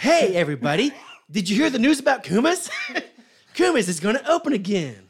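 hyped-up, excited, high commercial announcer voice. Joking about how their ads should sound, the speaker does an excited advertising voice. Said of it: "I like our excited advertising voice".

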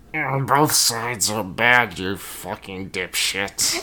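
sarcastic, mocking put-on voice. Discussing a group's philosophy, the speaker mocks them: mocking Elemis impression. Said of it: "here's my impression of the Elemis".

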